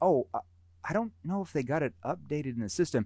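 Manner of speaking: puzzled, uncertain, confused delivery. Explaining how tone affects prospects, unsure, confused tone. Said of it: "when you act confused".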